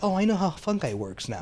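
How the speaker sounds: put-on high-pitched little kid voice.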